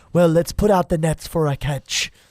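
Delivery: sudden shift into a put-on stage Irish accent. Retelling the fishing story, speaking as Jesus in an Irish accent. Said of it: "I don't know where that Irish accent".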